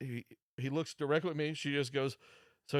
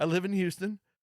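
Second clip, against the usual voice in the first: put-on Spanish accent, higher and louder; 4 semitones higher, 4 dB louder than usual. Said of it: "And he has an accent".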